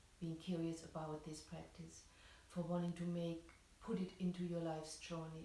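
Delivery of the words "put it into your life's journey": usual speaking voice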